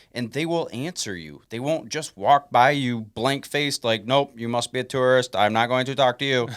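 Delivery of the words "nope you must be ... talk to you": flat, mechanical, monotone robot voice. Describing blank-faced passersby who ignore tourists, the speaker quotes them in a robot voice. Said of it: "you just did the robot voice".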